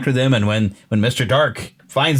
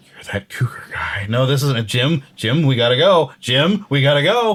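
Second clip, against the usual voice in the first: put-on boy's voice, slow and deliberate. Retelling the radio version's scene, answering Mr. Cougar: Will voice. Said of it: "And Will's the one like".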